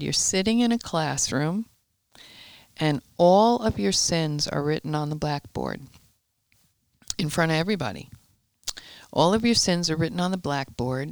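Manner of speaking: usual speaking voice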